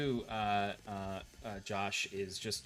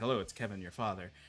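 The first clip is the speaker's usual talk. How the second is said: acted awkward father voice; 3 semitones lower, 3 dB quieter than usual. Imitating a father checking in on guitar practice: imitating Kevin awkwardly. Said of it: "but very awkwardly".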